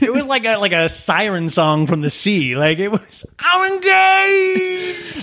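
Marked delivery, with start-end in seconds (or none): 3.4-5.2 put-on hoarse scream, much higher pitch. Recalling a woman's engagement announcement, imitating Brittany's excited scream. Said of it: "Brittany screams".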